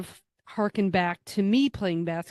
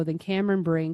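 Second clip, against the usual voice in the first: normal talking voice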